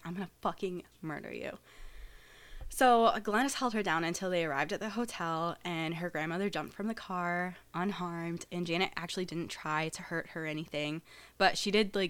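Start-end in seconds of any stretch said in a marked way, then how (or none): 0.0-1.5 mock menacing tone, quieter. Retelling what she said in the car beside her grandmother: imitating a threat. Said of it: "And she's like".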